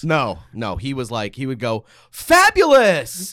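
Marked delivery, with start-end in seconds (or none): 2.1-3.3 very high, very loud, gushing, flamboyant voice. Imitating a dad's catchphrase, just like he said it: imitating dad's flamboyant "fabulous". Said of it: "He would do it just like that".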